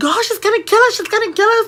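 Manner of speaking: very high, frantic, rushed panicked freaking out. Retelling the moment bloody handprints hit the van: imitating panicked speech. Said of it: "freaking out over here".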